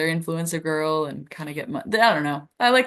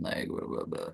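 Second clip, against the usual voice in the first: hushed, breathy, droning flat monotone. Showing how their accent has turned monotone from internet use, flat monotone. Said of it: "has turned into just like monotone".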